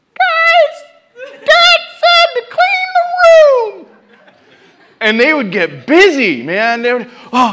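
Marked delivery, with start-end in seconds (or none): 0.0-3.9 put-on tiny squeaky child voice, very high, very slow. Speaker imitates Elijah telling the others to clean the room, imitating Elijah's squeaky voice. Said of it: "with his little squeaky voice".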